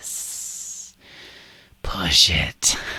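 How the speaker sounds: tiny, hushed, whispering inner voice.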